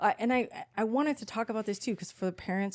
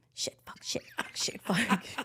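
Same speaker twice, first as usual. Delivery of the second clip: hushed whisper, slower. Retelling kids swearing behind a closed door: whispering. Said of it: "they're like whispering".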